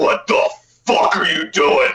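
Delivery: slow demonic growl.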